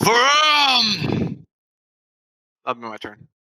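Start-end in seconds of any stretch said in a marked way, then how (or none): 0.0-1.4 high, loud triumphant yell. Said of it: "my fist up and just yell".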